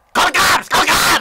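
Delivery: put-on yelled, very high, shrill, loud New York accent. Mocking a woman in a video he is watching: imitating a loud New York accent. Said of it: "just by her fucking loud mouth".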